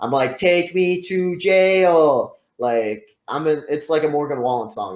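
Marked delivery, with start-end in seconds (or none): 0.4-2.3 mock very slow, loud, high furious yell, "jail" stretched. Retelling sitting handcuffed in the back of a cop car: imitating own yelling. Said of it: "I'm yelling in the back".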